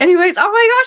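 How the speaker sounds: excited, gushing, high and loud squeal.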